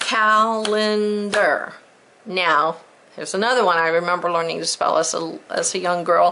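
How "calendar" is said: calendar stretched slow, syllable by syllable. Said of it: "I'm gonna clap it out".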